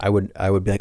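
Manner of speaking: ordinary talk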